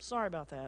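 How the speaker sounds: mock careless, offhand, insincere throwaway tone. Acting out Balaam asking God's forgiveness: Balaam's mock-offhand, insincere apology. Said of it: "he's asking God like this".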